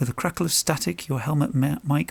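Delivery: ordinary delivery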